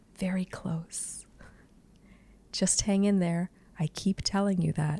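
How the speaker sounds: soft, hushed, murmured whisper. Retelling a couple's conversation, the speaker quotes her answer to him, retelling her whisper. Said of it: "And she whispers".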